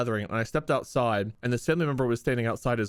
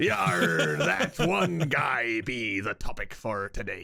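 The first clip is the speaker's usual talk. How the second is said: put-on stage pirate accent, yar and all; 3 semitones lower than usual. Asked by the others to do a pirate, announcing today's topic: pirate accent. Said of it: "How do you pirate?".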